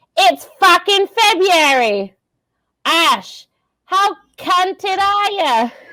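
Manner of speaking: put-on drawn-out high Australian accent. Reading another line as Jerry, trying a Jim Jeffries voice. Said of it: "more Aussie than British".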